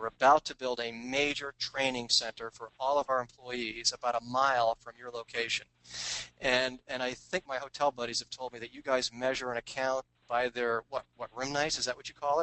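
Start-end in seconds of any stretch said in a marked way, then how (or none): none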